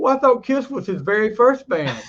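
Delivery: mock sarcastic, loud, swooping sing-song. Retelling what a friend said on the phone: imitating a sarcastic friend. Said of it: "he was being kind of sarcastic".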